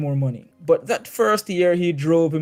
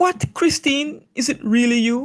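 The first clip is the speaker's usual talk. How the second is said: very high, startled, surprised exclamation; 9 semitones higher than usual. Reading a play extract aloud, Nora recognising her visitor: exclaiming.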